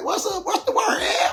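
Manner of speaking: very high, squeaky put-on voice. Retelling a phone call from a man who hit him up: squeaky Mississippi pimp voice. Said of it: "he got like a squeaky voice".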